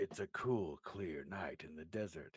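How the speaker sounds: put-on film opening narrator voice. Doing the opening narration like the original narrator: put-on narrator voice. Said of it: "I'll do it like him".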